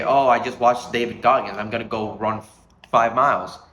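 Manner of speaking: normal talking voice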